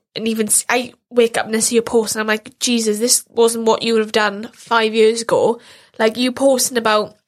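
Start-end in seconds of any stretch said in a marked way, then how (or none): none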